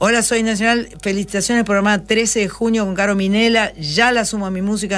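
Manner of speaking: ordinary talk, nothing marked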